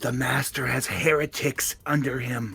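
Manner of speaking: hushed, whispered voice. Whispering in character to a confused ally during a fight: whispering. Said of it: "Denier whispers to him".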